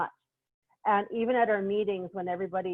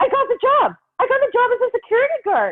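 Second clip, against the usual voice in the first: acted, thrilled, very high-pitched sing-song gush; 10 dB louder than usual. Retelling a phone call where a woman announces her new job, imitating someone very excited. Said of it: "to this so excited".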